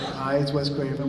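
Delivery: normal talking voice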